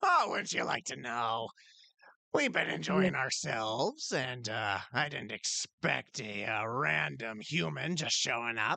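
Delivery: goblin character voice. Voicing a goblin answering a newcomer at the table: voicing the goblin. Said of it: "the goblin look, as he just looks at you and go".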